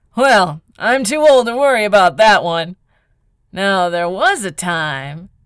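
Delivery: laughing out loud. An old captain answers Call, laughing out loud. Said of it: "The captain started laughing out loud".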